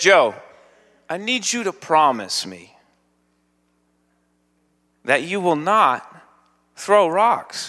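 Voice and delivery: mock sweetest, kindest, very nice tone. Retelling what Mindy said after stopping the speaker: imitating Mindy's nicest voice. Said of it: "with the nicest voice".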